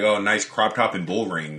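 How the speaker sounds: usual speaking voice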